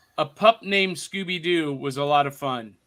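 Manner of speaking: ordinary talk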